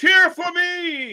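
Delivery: high, slow, taunting mock bellow.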